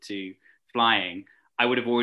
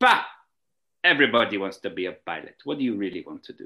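terrible put-on Russian accent; 4 dB louder than usual. Speaker retells Maria's reply to them, doing the worst impression of her Russian accent. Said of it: "I just did the worst impression".

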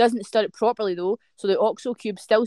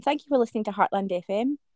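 polished, proper put-on phone voice, pitched up; 4 dB quieter than usual. Thanking listeners to heartland fm: proper phone voice. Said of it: "My proper phone voice on".

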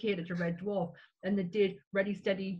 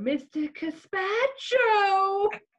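very high, loud, riled-up angry outburst; 12 semitones higher, 7 dB louder than usual. Telling how anger brings a remembered line to mind: Lister voice. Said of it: "Lister's voice in my head going".

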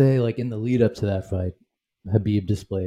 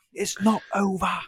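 put-on scream, higher; 10 semitones higher than usual. Retelling a fighter's taunt from the ground after a broken leg: imitating someone screaming. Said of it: "screaming, like".

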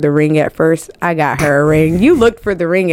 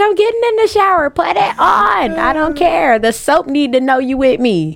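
much higher possessive fiancee voice, rushed then slowed. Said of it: "She's like".

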